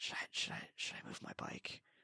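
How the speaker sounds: very soft, hushed, barely voiced whisper. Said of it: "leans in and whispers".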